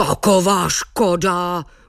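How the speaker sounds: grumbling, grumbled. Narrator reading as the angry water goblin Buclák after mugs break, grumbling. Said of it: "bručel".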